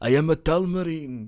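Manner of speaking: put-on high, very slow, stretched-out Spanish accent. Joking about a film character's changing accent: Prince Caspian Spanish accent. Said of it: "he has a Spanish accent".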